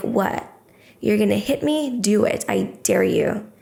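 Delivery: fiery, furious, defiant tone, wildly swooping. Retelling turning round to face someone squaring up: retelling an angry dare. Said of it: "I had this fire".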